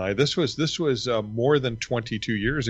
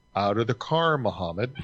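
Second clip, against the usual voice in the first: ordinary talk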